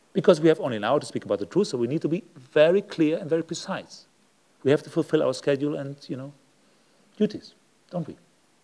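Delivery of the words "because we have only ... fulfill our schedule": very fast, loud, rattled-off speech. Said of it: "If we speak very fast".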